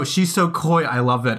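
ordinary delivery

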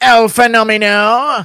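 loud, high, hyped-up calling out. Answering a chat request to give a Bisping impression. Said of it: "Can you give me a Bisping?".

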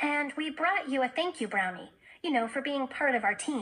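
plain

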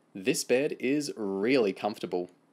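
usual speaking voice

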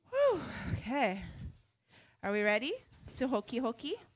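puffing, winded, catching breath between words. Starting a weekly lesson, asking if everyone is ready, out of breath. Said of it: "I'm a little out of breath".

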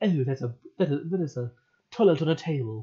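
British accent, tried on and put-on. Repeating another speaker's line back: imitating a british accent. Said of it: "I love the British accent".

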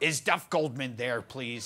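put-on thick, broad Minnesota accent with aggressive New York edge. Retelling a phone call from Colette Peters, imitating her Minnesota-New York accent. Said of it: "thick, like, Minnesota accent".

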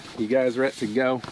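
lazy, drawling Southern accent on every word. After talk about drawls, a question said in a southern drawl. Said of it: "I said that with a Southern drawl".

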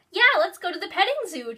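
eager, keen excited outburst, high and quick. Julie answers Phil and Justin's argument, excited. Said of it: "Julie said excitedly".

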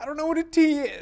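very high, whiny, panicky put-on voice. Voicing a compiler reporting errors: put-on whiny panicky voice. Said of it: "gets that whiny, panicky voice on".

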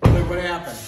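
low-pitched, loud, fatherly voice.

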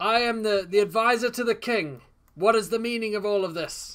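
loud calling out. Kenna steps forth from a group of people to address them, shouting out. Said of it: "Kenna begins to step forth and shout out".

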